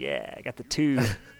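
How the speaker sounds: put-on smug, smirking nineties cool kid voice. Imitating how everybody talked in the nineties: smirking nineties cool kid voice. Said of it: "smirking element of the nineties".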